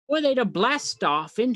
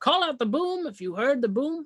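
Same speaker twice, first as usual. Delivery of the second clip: usual speaking voice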